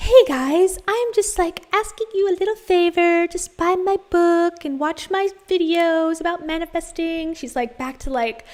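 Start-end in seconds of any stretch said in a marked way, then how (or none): 0.0-7.3 very sweet, gentle, calm, high-pitched voice. Imitating the speaker in the video asking a favor: very sweet and calm Rachel voice. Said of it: "very sweet and calm Rachel".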